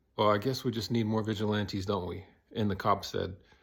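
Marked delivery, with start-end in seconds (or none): none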